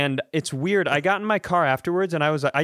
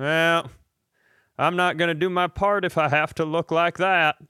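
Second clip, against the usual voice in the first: imitated old man's voice; 2 semitones higher than usual. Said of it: "I know that voice was old".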